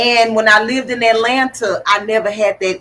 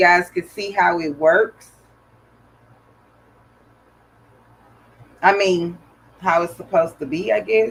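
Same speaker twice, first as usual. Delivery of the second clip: talking with hiccups, lower pitch; 4 semitones lower, 3 dB quieter than usual. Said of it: "I got the hiccups".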